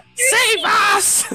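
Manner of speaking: put-on very high, loud, shrieking baby-voice scream. Screaming in an ally's face so she heals: screaming baby Crucazel voice. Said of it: "scream in my baby Crucazel voice in her face".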